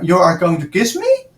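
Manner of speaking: rising intonation. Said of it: "So if his voice went, uh, up".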